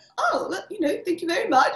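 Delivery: put-on very high, polite, proper British English accent. Retelling what a visiting actor said at his fitting: imitating Finn's British accent. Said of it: "in his British accent".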